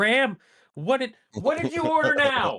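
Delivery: shrill, very high, very loud yell. Acting out a sitcom scene at the door: Kate yelling. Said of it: "you just hear Kate yell".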